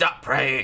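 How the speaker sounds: put-on possessed demonic voice. Retelling how she speaks to him in a put-on demon voice. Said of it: "So she does the demon voice, ... She does it like that".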